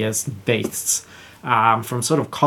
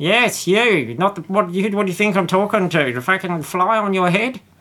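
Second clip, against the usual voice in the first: put-on small gnome voice, higher pitch; 8 semitones higher than usual. Game master voicing a small gnome talking to a player's character, in gnome character voice. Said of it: "and it is a small gnome with spectacles. / and it is a small gnome with spectacles. He's got grey hair, he's got a bit of a like scowl on his face, and he's wearing a tweed jacket with patches on the".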